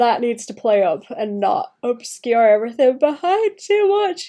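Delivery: speaking through a yawn. Speaker works through a layering problem aloud, yawning while talking. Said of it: "I'm sorry, I'm yawning".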